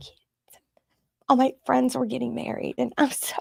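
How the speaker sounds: tearful crying speech, voice breaking. A guest on the show tells the host about past challenges, crying. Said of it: "I don't know why I'm crying".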